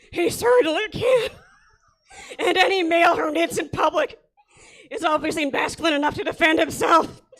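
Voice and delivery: very loud, bellowing, slow, high sports announcer drawl. Reading a letter aloud, slipping into Will Ferrell's Harry Caray voice. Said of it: "that guy from Saturday Night Live doing Harry Carey".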